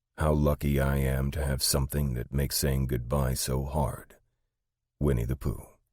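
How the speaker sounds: ordinary delivery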